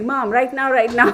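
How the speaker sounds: speaking in a dog's voice. Speaking for the restless dog who wants attention: voicing the dog. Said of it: "he's like".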